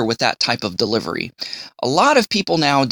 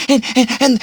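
mock breathless excited kid, higher and louder; 13 semitones higher, 4 dB louder than usual. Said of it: "they're talking like this".

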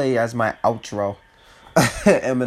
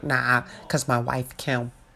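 hyped-up, amped delivery, done badly; 6 dB quieter than usual. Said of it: "The hype [name] voice".

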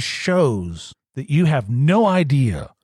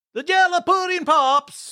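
fake Swedish accent, higher. Blurting a wrong answer to a trivia question: put-on Swedish accent. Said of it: "but I said it as a Swede".

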